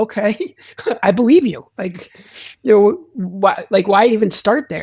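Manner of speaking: laughing, disbelieving tone.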